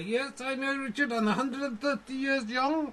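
put-on acted slightly drunk voice. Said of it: "I know you're a little drunk".

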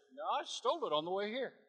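ordinary talk

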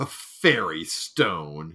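cutting, contemptuous, withering scorn. Dismissing a boy's mention of a fairy stone, in a scathing tone. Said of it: "he said in a tone so scathing".

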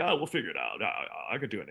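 low, swooping man's voice. Imitating Dave Otero answering an explanation about vocals: imitating Dave Otero. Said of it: "that's my imitation of him".

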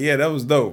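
ordinary delivery

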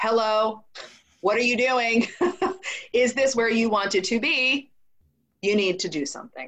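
put-on yelling voice. Retelling how life's circumstances seemed to speak: imitating a yell. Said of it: "the circumstances in my life were yelling at me".

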